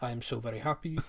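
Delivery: soft, quiet, interview-style speaking voice. Quoting what fans wait for Pot to say post-match, Pot impression. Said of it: "that impression".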